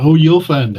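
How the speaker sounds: threatening, menacing tone. Answering a friend who wants to know what just happened, sounding like a threat. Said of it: "Why does it sound like a threat?".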